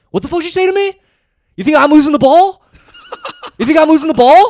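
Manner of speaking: put-on shrill, furious, raging screaming, high and swooping. Retelling a teammate's reply to criticism at halftime: imitating an angry confrontation. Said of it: "short, angry Indonesian guy".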